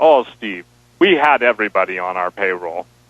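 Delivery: Russian spy way of talking. Retelling what a Russian spy said in an interview: imitating a Russian spy's way of talking. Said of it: "the guy literally talked like that".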